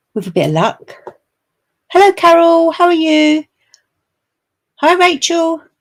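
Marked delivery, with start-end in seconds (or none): 2.0-5.6 calling out far and loud. Greeting someone across the road: shouting. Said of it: "I don't know why I'm shouting".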